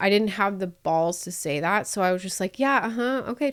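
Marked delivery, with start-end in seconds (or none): 2.6-3.5 mock noncommittal, curt, awkward uh-huh filler sounds. Retelling own replies meant to make a guest leave: retelling curt awkward replies. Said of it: "trying to make it awkward for him".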